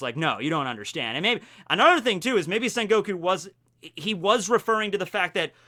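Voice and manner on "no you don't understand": normal talking voice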